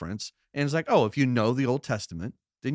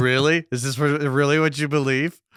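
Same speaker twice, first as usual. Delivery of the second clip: mocking sarcastic tone, louder; 5 dB louder than usual. Acting out a sarcastic reading of the passage: sarcastic reading of the text. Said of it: "on a sarcastic reading".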